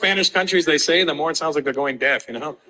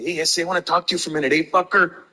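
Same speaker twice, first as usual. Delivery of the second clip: tough LA gangster voice, played hard.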